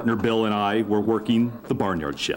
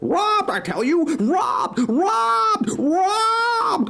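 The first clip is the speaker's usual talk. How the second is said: very high, shrill, drawn-out clucking hen voice; 5 dB louder than usual. Narrator voicing the hen who reports a robbery, clucking hen voice. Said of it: "she clucked, / She answered".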